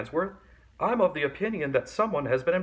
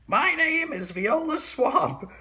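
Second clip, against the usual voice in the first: very high, scratchy, scraping lady voice; 12 semitones higher than usual. Reading a story, a lady enters and introduces herself to the kids in a scratchy voice. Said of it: "said the lady in a scratchy voice".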